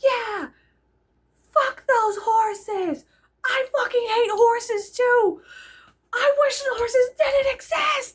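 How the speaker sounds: play-acted, very high, loud screaming. Retelling cheering at protesters out the sunroof: retelling own screaming. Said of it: "I was just screaming".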